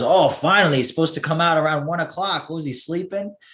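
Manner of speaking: put-on Italian accent. Retelling his grandfather's reaction to Biden's address, imitating grandfather's thick Italian accent. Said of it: "hardcore Italian, right off the boat, you know, like hard, thick accent".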